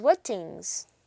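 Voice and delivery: ordinary talk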